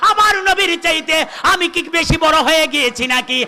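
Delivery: high, loud emotional father voice.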